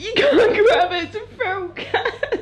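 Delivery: high-pitched laughing while half-crying through tears.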